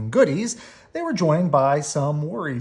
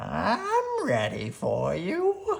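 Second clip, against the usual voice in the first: put-on gravelly old woman voice, pitched up, raspy, stretched "I'm"; 5 semitones higher, 5 dB quieter than usual. Reading a story: old Miss McGriz greets the terrified cubs at the doorway, gravelly voice. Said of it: "she said in a gravelly voice".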